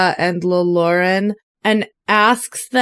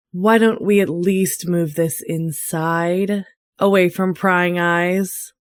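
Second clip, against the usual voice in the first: character voice, lowered in pitch. Saza suggests to two companions that they move inside, in a lowered voice. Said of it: "and lowers her voice".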